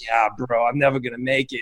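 put-on heavy Boston accent. Retelling what another man said to him, the speaker imitates a heavy boston accent. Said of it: "with that heavy Boston accent".

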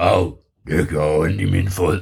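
deep, slow, big storybook monster voice. Telling a story aloud, the narrator voices the monster: deep monster voice. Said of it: "han havde sådan en dyb stemme".

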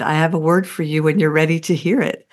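put-on, very gentle voice. Telling the listener what they once said beside the speaker at a service: retelling very gentle words. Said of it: "very gently said".

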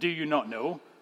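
put-on knowing, you-should-know-this, as-if-obvious tone. Quoting a question Paul asks: Paul's you-should-know-this tone. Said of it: "with this tone like we should know this".

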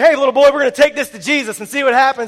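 loud, bullying tone. Retelling a man taking a little boy's bread and fish, in a cafeteria bully voice. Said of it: "doesn't he sound like the cafeteria bully".

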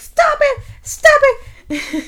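mock, very high, shrill, loud screaming. Retelling a scene where a character screams at a fight: imitating a scream. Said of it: "Sansa starts screaming, like".

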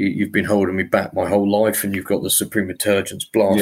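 plain

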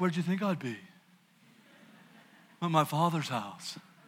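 put-on low, mouthy, lippy twelve-year-old voice. Acting out twelve-year-old Jesus answering with lip service: impersonating the speaker's son. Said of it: "That's my impersonation of my son".

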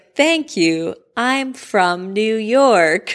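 slow, high, patronizing, condescending drawl. Retelling how a woman mocked someone else, in a mock-condescending tone. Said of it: "very also condescending tone".

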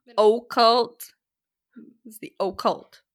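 put-on Midwest accent with Midwestern O's. Imitating how a woman pronounces her O's, in a Midwest accent. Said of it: "Pronounces her O's".

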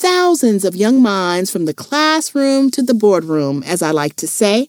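ordinary delivery

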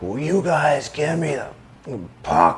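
high, drawn-out hollered scream. Retelling how a teammate screamed at the defensemen: imitating a teammate screaming. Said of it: "just start screaming at the D".

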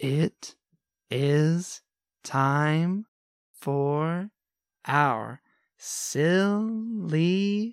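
said very slowly, drawn-out tempo. Asked by the host to say the line with a very slow tempo. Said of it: "but with a very slow tempo?".

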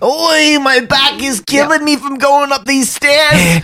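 put-on stretched-out high New York accent. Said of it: "If only he said oi".

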